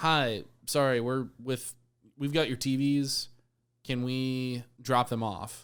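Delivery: ordinary talk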